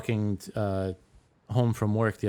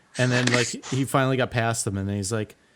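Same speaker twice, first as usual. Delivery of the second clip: plain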